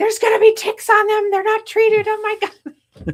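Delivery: shrill, very high scream at full volume. Telling what happened last night, the speaker re-enacts her own screaming. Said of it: "after I was screaming".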